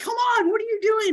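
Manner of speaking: put-on very high, shrill screaming of children. A parent imitates the kids screaming in the car, imitating kids screaming. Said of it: "my kids every now and then will scream".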